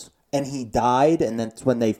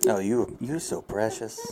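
put-on creeper voice, quieter; 4 semitones lower, 7 dB quieter than usual. Joking with friends about what R. Kelly said: creepy R. Kelly voice. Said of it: "I can just hear him in that fucking creeper voice".

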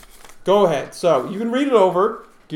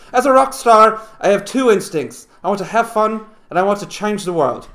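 put-on louder voice, Irish accent; 4 semitones higher, 6 dB louder than usual. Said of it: "speaking with an Irish accent".

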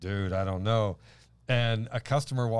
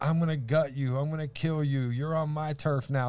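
put-on screamed voice, higher pitch; 5 semitones higher than usual. Retelling a woman's threats at the speaker: imitating someone screaming threats.

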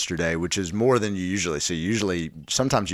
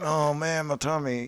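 high fake tummy-ache groan, pitched up. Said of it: "I have to feign like".

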